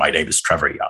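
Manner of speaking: put-on low Western drawl. Speaker recalls answering suitors' calls for her aunties in a fake deep Western voice. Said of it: "fake a voice, like a Western voice. So it would get deep".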